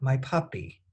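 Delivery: ordinary talk, nothing marked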